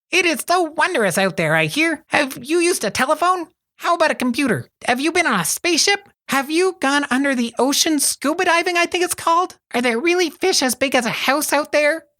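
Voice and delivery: very high, squeaky, chittering chipmunk voice. Welk, excited to meet a newcomer from Montreal, in a chittering chipmunk voice. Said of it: "he chittered in a voice like a chipmunk".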